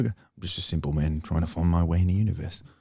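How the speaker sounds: put-on Australian-accented speech. Quoting a movie line after another speaker's try: Australian accent. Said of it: "that was Australian".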